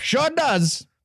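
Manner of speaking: put-on old-timey carnival barker showman voice. Acting out a radium tonic sale with a co-host, in an old-timey carnival barker voice. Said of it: "talking in the old timey like Carnival Barker voice".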